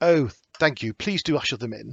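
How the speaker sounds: pleasant-sounding English voice. Voicing a professor who welcomes visitors in: Professor Hale, pleasant English voice. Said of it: "very pleasant English voice say".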